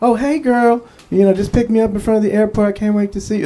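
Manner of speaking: chatty phone voice, shot up very high. Retelling what a woman said on her cell phone after landing, imitating a very high voice. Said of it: "her voice went up like eight octaves".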